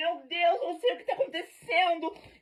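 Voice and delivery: mock desperate, high, tearful sobbing. Retelling own words while drunk and desperate: imitating own past crying. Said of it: "Eu tava toda chorando".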